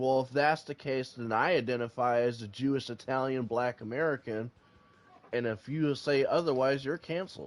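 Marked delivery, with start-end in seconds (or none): none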